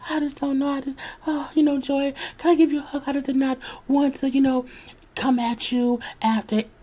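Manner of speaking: put-on weepy sobbing, pitched very high. Retelling how a cast member spoke while fake crying: imitating someone fake crying. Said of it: "fake crying".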